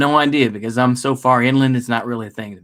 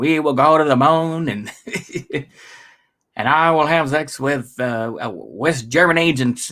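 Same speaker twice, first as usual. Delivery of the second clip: bad, put-on, laid-on Boston accent; 2 semitones higher than usual. Speaker tries the accent while admitting it isn't good: bad JFK Boston accent. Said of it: "I can't do a good Boston accent".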